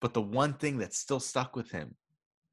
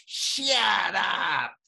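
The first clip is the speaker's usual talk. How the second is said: loud, high-pitched yell. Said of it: "Adam Sandler going".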